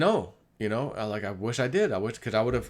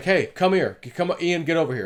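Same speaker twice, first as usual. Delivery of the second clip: mock, slightly raised, higher-pitched voice; 6 semitones higher, 5 dB louder than usual. Retelling calling someone over to come here, with a slightly raised voice. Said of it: "that initial little bit of raising my voice".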